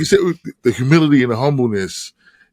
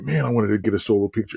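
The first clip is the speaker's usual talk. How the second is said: put-on mutter under breath, lower and quieter; 4 semitones lower, 7 dB quieter than usual. Retelling a wish spoken while lining up for pictures: imitating muttering under breath. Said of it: "under my breath".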